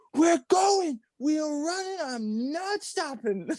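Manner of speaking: play-acted, high, barking drill-sergeant yell. Speaker retells rushing a kid to their house, retelling a drill-sergeant yell. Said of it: "I yelled at this kid like a drill sergeant".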